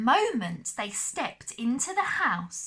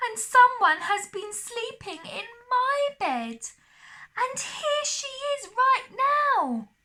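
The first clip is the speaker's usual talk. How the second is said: very high, small, wee little voice; 13 semitones higher, 4 dB louder than usual. Reading Goldilocks aloud, speaking as Baby Bear; Baby Bear's wee little voice. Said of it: "cried the Baby Bear in his wee little voice".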